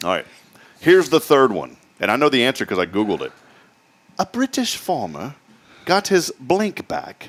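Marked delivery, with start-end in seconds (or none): 4.2-7.3 poor put-on British accent, very drawn out, slow, high. Reading the third trivia question aloud in a bad put-on British accent. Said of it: "That's not even a good British accent".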